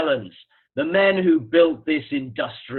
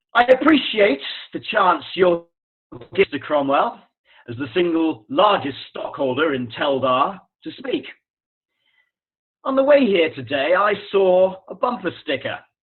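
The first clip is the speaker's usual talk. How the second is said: put-on upper-crust British accent; 3 semitones higher than usual. Performing a speech for another speaker as a toff: posh Queen's English British accent. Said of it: "take the whole thing with the British accent".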